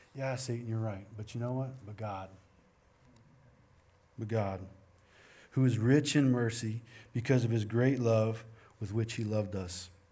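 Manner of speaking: usual speaking voice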